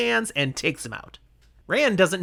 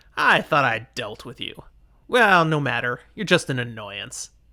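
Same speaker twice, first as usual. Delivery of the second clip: dismissive, offhand, brushing-off tone; 3 semitones lower than usual. Narrator reading the Forsaken's reply to Moiraine, Bilal speaking dismissively. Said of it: "Bilal speaks dismissively".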